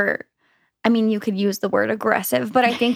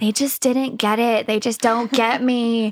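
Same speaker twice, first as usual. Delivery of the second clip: put-on her own younger teenage voice. Looking back, the speaker acts out their past teenage self: teenage voice. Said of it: "That's my teenage voice".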